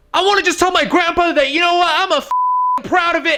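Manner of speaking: put-on, high, very loud, proud delivery. Retelling a date's words in a public bar: imitating someone talking loudly. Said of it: "he would say that very loudly".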